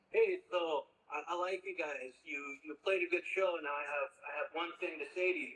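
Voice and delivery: put-on heavy Italian accent, laid on thick. Speaker quotes a ranking club member talking to his band, in a thick italian accent. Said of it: "in a thick Italian accent".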